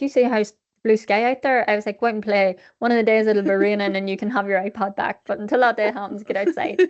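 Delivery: ordinary delivery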